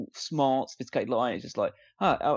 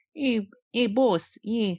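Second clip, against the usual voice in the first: whiny, high, slow, drawn-out voice; 8 semitones higher than usual. Mocking a film character's accent: whiny Felix Leiter voice. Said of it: "more of a whiny tone to it".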